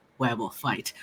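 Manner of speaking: excited muttering under breath. Voicing a character muttering to herself before a fight: excited whisper under breath. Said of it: "literally just under her breath to herself, very excitedly".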